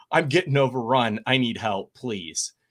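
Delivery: ordinary talk, nothing marked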